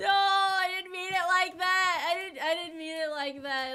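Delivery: very high, loud, slow, mock tearful wail.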